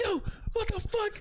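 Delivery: play-acted furious cry, very high-pitched. Retelling a prank video where the victim got mad: imitating a furious man. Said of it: "he got so mad".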